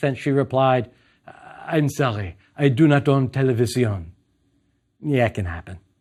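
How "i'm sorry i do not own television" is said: put-on beautiful French accent. Retelling a woman's reply to the speaker's question, in a french accent. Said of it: "In a beautiful French accent".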